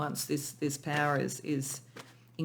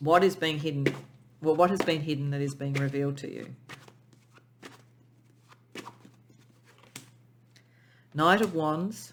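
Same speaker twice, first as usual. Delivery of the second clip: tearful voice, close to crying. Reading tarot cards aloud while in tears: tearful, close to crying. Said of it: "I'm quite in tears at the moment".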